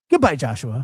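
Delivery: mock curt, angry, annoyed tone. Imitating her goodbye before she hangs up: imitating a curt angry goodbye. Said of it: "she hangs up just like that".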